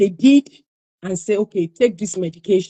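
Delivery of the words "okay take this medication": ordinary delivery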